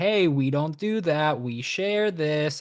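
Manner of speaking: put-on warm, friendly voice used for talking to children. Speaker demonstrates how to correct another parent's child, friendly kid voice. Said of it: "you like do it in the kid voice".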